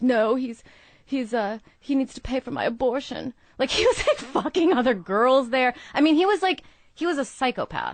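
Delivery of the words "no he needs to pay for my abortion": mock sobbing, bawling like a girl. Retelling what a bawling girl demanded of the speaker, imitating a girl bawling. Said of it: "there's this girl bawling".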